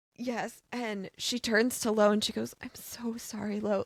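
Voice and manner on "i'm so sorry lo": mock sincere, wholehearted, earnest tone. Retelling a character apologizing to a friend, imitating an earnest apology. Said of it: "she's so earnest in her apology".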